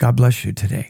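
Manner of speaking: very nice, sweet, pleasant tone. Retelling what the speaker said to a woman, in a very nice tone. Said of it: "in a very nice tone".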